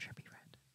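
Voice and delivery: hushed, sheepish, very quiet whisper. Admitting a name the speaker is somewhat ashamed of: whispering. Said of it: "I'm gonna whisper it".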